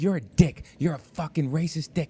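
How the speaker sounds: woman's furious, angry, screaming voice. Retelling a woman leaving the show and screaming at him: retelling a woman screaming. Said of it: "And she's screaming at me".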